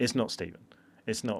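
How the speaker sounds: acted blunt, quiet, no-nonsense, matter-of-fact tone. Retelling what the dad said about the prank, imitating a blunt statement. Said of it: "he also said very bluntly".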